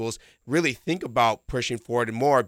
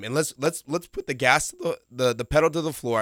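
cracking, breaking voice, higher pitch; 3 semitones higher than usual. Commentator describes the team pushing forward after a two-goal cushion, voice cracking. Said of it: "as my voice cracked".

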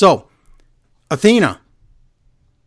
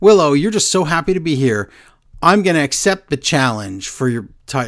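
plain

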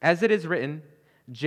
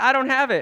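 mock offhand, couldn't-care-less, raised and high; 8 semitones higher, 5 dB louder than usual. Retelling a student's answer to the professor: imitating a nonchalant reply. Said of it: "Nonchalantly, just whatever, chilling".

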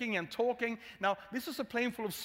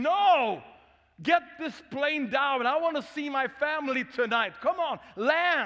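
loud, screaming shouting; 4 semitones higher, 7 dB louder than usual. Retelling a passenger demanding the plane land: imitating someone screaming. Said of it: "He started screaming and shouting".

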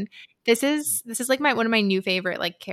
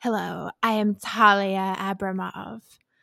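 put-on audiobook narrator voice, read-aloud style. Discussing an audiobook, a listener imitates its narrator, Talia Abramov audiobook voice. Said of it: "Should I just start talking like this all the time?".

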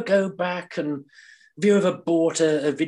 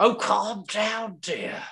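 high, pitched-up character voice; 5 semitones higher, 3 dB quieter than usual. Repeating the catchphrase after being told to calm down: sounds like George from Rainbow. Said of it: "You make him sound like George from Rainbow".

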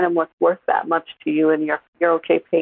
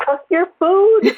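mock exasperated, very high, shrill shouting; 13 semitones higher, 4 dB louder than usual. Retelling yelling at the TV at a player: imitating someone yelling. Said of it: "I was just yelling at the T V".

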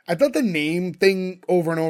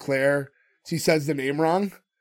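ordinary talk

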